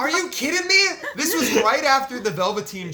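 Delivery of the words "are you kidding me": re-enacted yell, higher and louder. Retelling a wrestling match they watched: imitating own past yelling. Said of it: "I start yelling".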